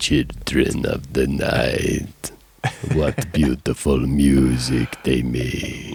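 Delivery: put-on vampire voice, low, slow. Told to do the voice lower and slower, saying the line: low, slow Bela vampire voice. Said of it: "do the voice lower and slower".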